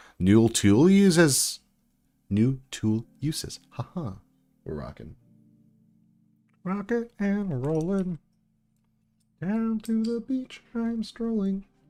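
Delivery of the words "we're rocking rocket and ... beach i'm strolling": very high frog puppet voice, rhyming. Talking to the guys watching, slipping into a Kermit the Frog voice. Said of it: "Going Kermit the Frog there".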